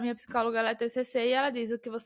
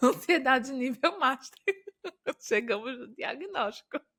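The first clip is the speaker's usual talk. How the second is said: laughing through the words. Addressing her audience, laughing while talking. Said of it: "eu tô rindo".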